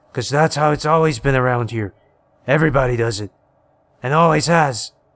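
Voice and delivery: growled, growling voice. A narrator reads a man's answer after he balls a fist, growled. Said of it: "He was a large man in multiple ways, / He was a large man in multiple ways, / He was a large man in multiple ways, / he growled".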